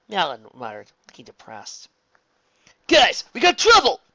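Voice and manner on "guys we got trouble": far-raised, high, loud urgent call. Narrator reading a teammate calling over to the group just before alarms; calling over. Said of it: "Nikki called over".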